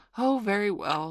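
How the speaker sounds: mildly irritated reply. Peter answers Wendy after she refuses to tell him, a little nettled. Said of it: "a little nettled".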